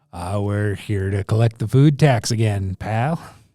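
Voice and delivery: loud dwarf bandit voice. Voicing a dwarf bandit who demands food tax: dwarf bandit voice. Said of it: "the dwarf steps forward and says".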